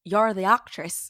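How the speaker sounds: very loud, booming, bad, not-quite Irish accent. Retelling what the building's contractor said one day, bad Irish accent. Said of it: "I don't have a good Irish accent".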